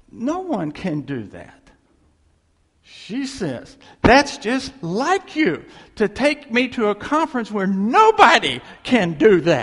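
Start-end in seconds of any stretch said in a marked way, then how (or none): 4.0-9.7 mock furious, raised, pitched-up complaining voice. Quoting a woman furious at being set up at a conference, retelling her furious reply. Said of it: "she's furious at me for setting her up".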